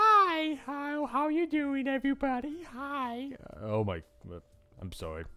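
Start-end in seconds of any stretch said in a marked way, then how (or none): 0.0-3.3 slow, high-pitched princess voice. Mocked for a bad princess voice, showing the real best one: best princess voice. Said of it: "my best princess voice is".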